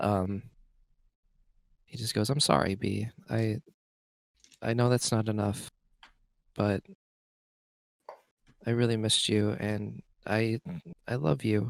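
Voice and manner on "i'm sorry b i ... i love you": drawn-out, slow half-whisper, barely audible. A character apologizes to B, pretty much half-whispering. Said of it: "pretty much like whispers at this point".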